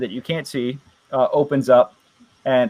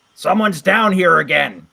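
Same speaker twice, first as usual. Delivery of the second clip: goblin voice, called out; 3 semitones higher than usual. A game master voices a goblin calling out in Goblin: goblin calling out. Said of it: "he calls out in Goblin".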